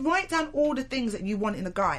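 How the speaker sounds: ordinary talk, nothing marked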